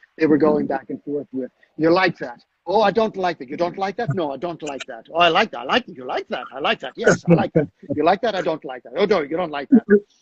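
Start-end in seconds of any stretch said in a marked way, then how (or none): 1.8-9.8 horrible, bad, mock Irish accent. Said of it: "here's my, you know, my, my horrible, uh, Irish accent".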